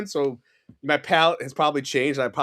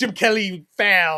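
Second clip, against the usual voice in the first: heavy, thick, put-on Italian accent; 4 semitones higher, 4 dB louder than usual. Speaker quotes their dad from Italy in his thick Italian accent. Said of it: "he has a thick Italian accent".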